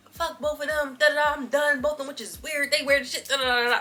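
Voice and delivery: mock heated, fired-up, fed-up cussing rant. Retelling a friend cursing at the speaker and another friend: imitating a heated friend. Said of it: "she's just heated".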